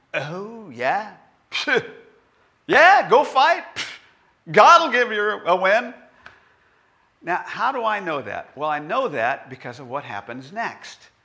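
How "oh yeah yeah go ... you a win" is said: put-on dripping sarcasm, raised and pitched up. Speaker acting out a man's words in a Bible verse, acting out dripping sarcasm. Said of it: "his tone was dripping with sarcasm".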